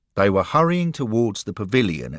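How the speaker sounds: ordinary delivery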